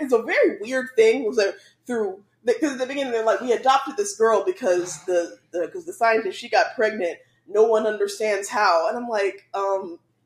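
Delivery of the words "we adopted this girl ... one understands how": usual speaking voice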